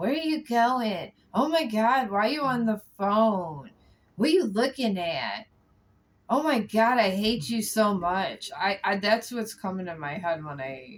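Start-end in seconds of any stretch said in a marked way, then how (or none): 0.0-8.5 loud, raised yelling tirade. Speaker imagines a controlling person nagging the listener, imitating someone yelling. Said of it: "I see them just yelling at you".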